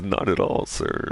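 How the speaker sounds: crazy, weird NPC voice dropping very low. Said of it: "such an N P C voice".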